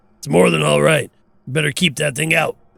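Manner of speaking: creaky ogre voice.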